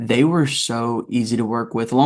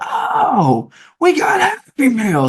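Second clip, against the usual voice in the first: put-on shrieking sing-song yell, very high, swooping, drawn out; 13 semitones higher, 4 dB louder than usual. Retelling a fellow actor during camera tests, imitating someone screaming.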